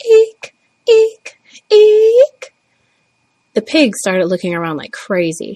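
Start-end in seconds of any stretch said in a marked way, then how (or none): 0.0-2.5 piercing, very high, drawn-out birdlike squeal. Retelling crying out from the window at the pigs, in a shrill bird-like cry. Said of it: "a bird-like sound in a shriller voice".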